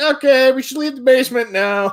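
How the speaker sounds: high, alarmed voice.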